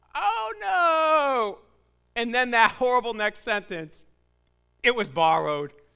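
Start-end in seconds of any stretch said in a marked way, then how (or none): 0.1-1.5 high, drawn-out dismayed wailing no. Telling a story of a man chopping wood, retelling him crying out. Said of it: "And he cries out".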